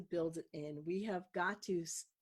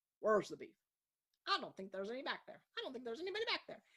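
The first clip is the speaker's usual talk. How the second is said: put-on little old lady voice, high and swooping; 5 semitones higher than usual. Speaker quotes the little old lady from a Wendy's commercial, Wendy's commercial old lady voice. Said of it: "it was the little old lady".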